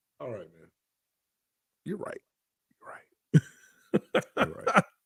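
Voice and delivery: soft, dejected, defeated-sounding. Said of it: "but you sound dejected".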